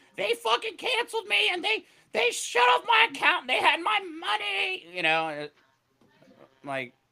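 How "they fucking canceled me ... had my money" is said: shrill, very high, furious screaming rant. Acting out a woman who gets on TikTok wanting attention, imitating a woman screaming. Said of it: "she's screaming".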